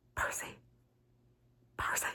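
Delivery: urgent scream kept to a hushed whisper. Retelling a character calling out to Percy inside a trap, imitating a whisper-scream. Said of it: "whisper screaming at Percy".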